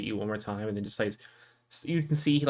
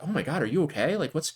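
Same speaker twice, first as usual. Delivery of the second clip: concerned, worried, pitched-up voice; 6 semitones higher, 4 dB louder than usual. Voicing a militiaman who sees a player react: concerned militiaman. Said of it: "one of the militiamen, like, kinda sees you react".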